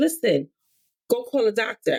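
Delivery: normal talking voice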